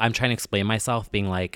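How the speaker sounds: normal talking voice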